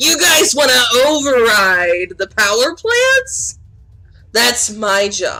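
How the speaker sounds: crackling, hissing, swooping electric villain voice. A game master voices a villain speaking to the players, in a sparky, crackling, hissing voice. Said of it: "a sparky, crackling, hissing voice go".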